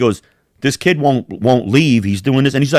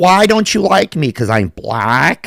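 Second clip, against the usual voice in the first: nerdy-sounding put-on male voice, higher; 4 semitones higher than usual. Retelling how a man at the airport talked: imitating a nerdy guy's voice. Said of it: "The way he talked".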